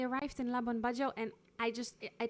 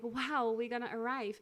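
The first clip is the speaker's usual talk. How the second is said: usual speaking voice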